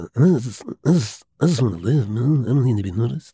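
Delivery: halting, stammered delivery, stumbling over opening words. Retelling a film scene, doing Brando's reply: Marlon Brando impression. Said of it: "That was a pretty good impression".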